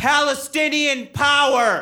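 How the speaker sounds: very high, loud shout. Retelling a voice yelling from the back during a set: imitating a heckler yelling.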